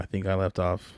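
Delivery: plain reading voice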